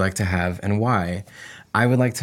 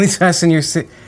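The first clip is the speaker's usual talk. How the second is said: put-on drunk laughing voice, higher, louder; 9 semitones higher, 6 dB louder than usual. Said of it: "drunk, laughing".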